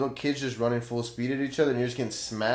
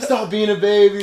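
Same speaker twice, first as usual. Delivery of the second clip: loud yelling, higher pitch; 9 semitones higher, 11 dB louder than usual. Retelling a dad at football practice yelling: imitating a dad yelling. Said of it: "yelling at me".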